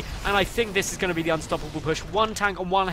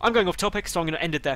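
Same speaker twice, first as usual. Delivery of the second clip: usual speaking voice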